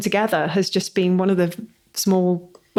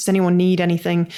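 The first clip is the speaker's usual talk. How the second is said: usual speaking voice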